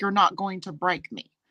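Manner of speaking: ordinary delivery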